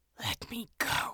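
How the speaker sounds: torn, ragged, rough-edged whisper. First-person narrator, mother's fingers at the throat, speaks to mother: ragged whisper. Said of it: "I whispered, all ragged-edged".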